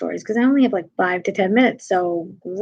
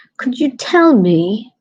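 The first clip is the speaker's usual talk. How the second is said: loud fake put-on British accent; 3 semitones higher, 5 dB louder than usual. Lost New Yorker retells asking people for directions: put-on British accent. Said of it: "I'll just like become like British".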